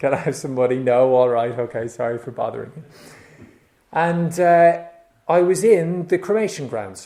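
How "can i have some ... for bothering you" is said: play-acted half-hearted, unenthusiastic, going-through-the-motions delivery. Retelling own fundraising phone calls: imitating own half-hearted phone ask. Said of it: "I'd dial a number half-heartedly".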